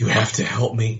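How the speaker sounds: conspiratorial, secretive, confiding aside. Player floating in place turns and speaks to the others in a hushed voice. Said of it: "say to them in hushed voices".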